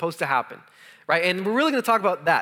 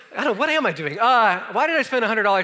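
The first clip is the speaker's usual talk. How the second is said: ordinary talk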